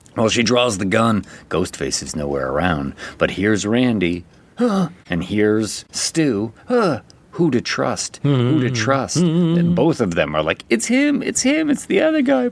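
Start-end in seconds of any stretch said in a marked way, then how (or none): 10.6-12.4 mock very high, frantic begging and pleading. Speaker recounts a film scene, retelling two characters pleading with her. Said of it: "They're both pleading with her".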